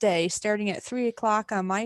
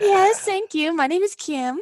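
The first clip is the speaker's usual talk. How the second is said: very high, put-on woman's voice; 10 semitones higher, 6 dB louder than usual. Answering a request to use his female voice: put-on female voice. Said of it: "put it on his female voice".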